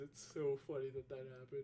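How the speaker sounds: speaking while yawning. Chatting about a past stream, yawning while talking. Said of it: "Please excuse me for yawning".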